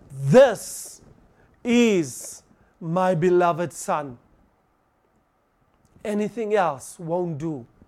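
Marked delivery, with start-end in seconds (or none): 0.3-4.2 measured, deliberate, slow, clear proclaiming delivery. Speaker showing how the Father announces His Son to everyone: loud clear announcement. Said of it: "you have to say it like this".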